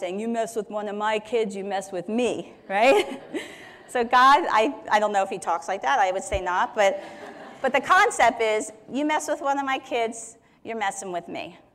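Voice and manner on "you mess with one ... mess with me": put-on rough, tough South Philly accent. Speaker pictures someone getting all rough and tough: rough South Philly accent. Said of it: "someone with a South Philly accent and kind of getting all rough and tough".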